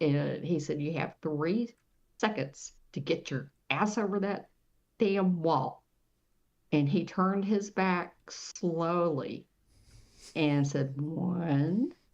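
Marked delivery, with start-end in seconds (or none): none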